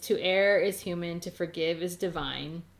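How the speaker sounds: ordinary talk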